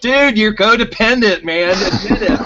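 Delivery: very high-pitched screaming rant. Retelling reacting to a video on the phone: retelling screaming at phone.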